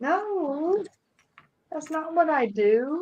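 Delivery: whiny, very slow, with a drawn-out no. Denying a teasing remark from another speaker: whiny tone. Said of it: "You said that in a whiny tone".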